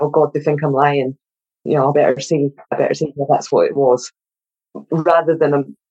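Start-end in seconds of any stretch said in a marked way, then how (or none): none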